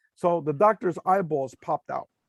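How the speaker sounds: ordinary delivery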